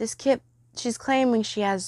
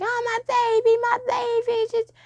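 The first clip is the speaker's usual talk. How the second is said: put-on very high, drawn-out, sobbing baby-like wail and scream; 14 semitones higher than usual. Retelling a mother's reaction around a nine one one call, imitating someone screaming and crying. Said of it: "she's screaming and crying".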